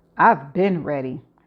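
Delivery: sassy delivery. Answering Carl as he holds out his hand, in a sassy tone. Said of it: "I say in my sassy tone".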